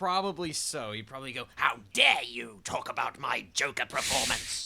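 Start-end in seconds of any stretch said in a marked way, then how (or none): 1.5-4.7 loud, rough, raspy, menacing villain voice. Imagining Mark Hamill calling to scold them, the speaker does a mock-threatening Joker voice. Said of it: "threaten you in the Joker voice".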